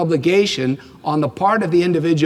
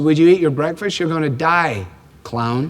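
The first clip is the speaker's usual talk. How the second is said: ordinary delivery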